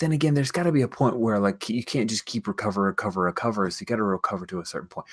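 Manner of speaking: fast, quiet, unclear muttering under the breath. Thinking aloud mid-explanation, then apologizing for it, mumbling. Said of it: "I'm mumbling".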